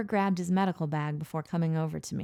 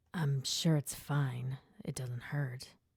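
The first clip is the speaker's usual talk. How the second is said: gruff grunt, lower and quieter; 4 semitones lower, 7 dB quieter than usual. Reading a story aloud, the patient answers the doctor: grunting. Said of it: "Jake grunted".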